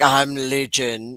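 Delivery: acted deep croaky voice. Retelling answering a partner's good morning: imitating own deep morning voice. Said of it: "Because my voice is deep".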